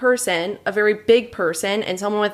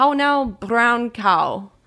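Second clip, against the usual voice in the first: put-on Irish accent. Speaker asked by another to do an irish accent, irish accent. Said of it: "just do an Irish accent".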